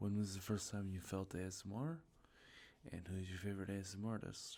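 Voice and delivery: ordinary talk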